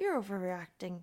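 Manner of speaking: bad, weak put-on Scottish accent. Discussing a show, imitating a woman's reply to Will: bad accent impression. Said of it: "I know like it's not a great accent or impression".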